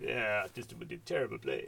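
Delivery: quiet, terrible French accent.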